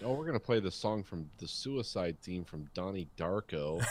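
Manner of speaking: ordinary delivery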